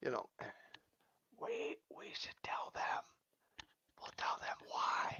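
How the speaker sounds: soft, hushed whisper, just under the breath. Asked why the show has its name, the speaker agrees to explain, whispering. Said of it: "I'm not sure why I'm whispering".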